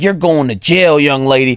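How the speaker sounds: put-on rambunctious man voice. Retelling how a man who loves his job talked to a young lady, mimicking a passionate, rambunctious man. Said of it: "passionate and motivated by his job ... more rambunctious".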